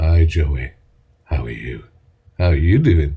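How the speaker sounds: very low, deep late-night chat-line voice. Offering to do some late night chats for someone, late-night chat voice. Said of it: "do you want me to do some late night chats for Joey".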